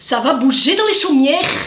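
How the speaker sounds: loud, put-on Belgian French accent. Signing off a video to viewers, in a Belgian accent. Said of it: "j'ai fait un accent belge".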